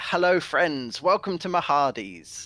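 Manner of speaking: warm, welcoming, very friendly tone. Voicing a merchant greeting from a marketplace: very friendly voice. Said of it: "in a very friendly voice".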